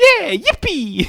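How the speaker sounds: pitched way up, game-hero style. Joking that the alarm senses movement and calls out: Mario voice. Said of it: "it's sensing movement, so it's just going".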